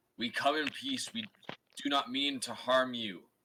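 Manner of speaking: high, loud, peaceful call. A player's character yells in Primordial to two Earth Elementals; yelling out to elementals. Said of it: "Okay, so I'm going to yell out and basically in Primordial to the other two".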